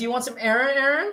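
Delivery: put-on Valley Girl voice. Showing how his name sounds said a certain way: valley girl voice. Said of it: "like like Simi Valley Girl".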